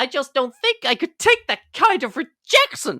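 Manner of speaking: cartoon dinosaur character voice. Quoting the toy dinosaur's line from the original Toy Story: Rex impression. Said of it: "honestly thought I was in the room with Rex then".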